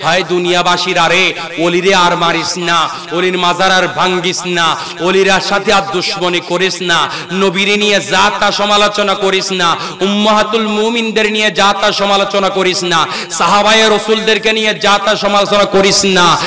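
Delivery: ordinary delivery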